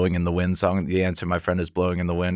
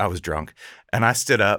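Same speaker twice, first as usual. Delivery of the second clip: ordinary delivery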